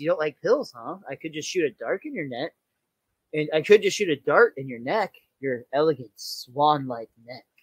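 eerie, unsettling, creepy, sinister voice. Recapping a scene where the house threatens Marge, putting on a very creepy voice. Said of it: "Very creepily".

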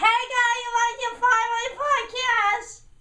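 irritating, annoying way of talking, high and loud. Mocking a man who wants to be on the podcast, imitating an annoying guy. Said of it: "he talks like this".

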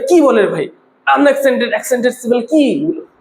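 ordinary talk

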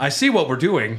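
ordinary delivery

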